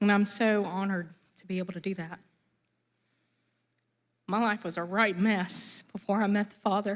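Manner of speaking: voice holding back tears. Sharing an unplanned testimony before a crowd, holding back tears. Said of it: "I try not to cry, I'm sorry".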